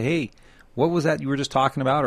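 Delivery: normal talking voice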